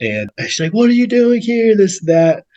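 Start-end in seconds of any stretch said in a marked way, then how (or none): 0.7-1.8 loud high-pitched yell. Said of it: "starts yelling at".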